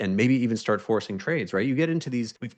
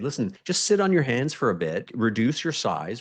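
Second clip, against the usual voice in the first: plain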